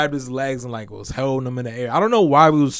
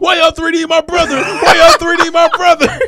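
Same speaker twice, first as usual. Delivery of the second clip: put-on acted little kid bawling, very high and loud; 9 dB louder than usual. Retelling how a small boy at daycare turned around, imitating a child crying. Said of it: "He just turned around crying like".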